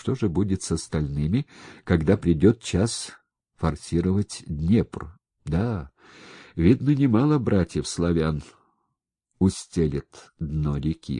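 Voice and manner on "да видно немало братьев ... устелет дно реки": ordinary delivery, nothing marked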